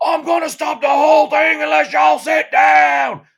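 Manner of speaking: very loud, very high, screaming country voice. Retelling how a man got an unruly crowd to sit down, retelling a scream. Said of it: "just screamed as loud as he could".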